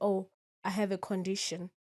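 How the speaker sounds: ordinary talk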